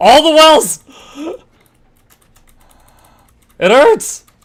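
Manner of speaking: frantic, panicked cry, very high and very loud. A streamer whose character is starting to get hurt in the game: panicking. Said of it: "I'm panicking".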